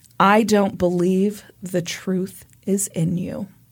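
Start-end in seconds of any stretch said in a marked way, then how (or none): none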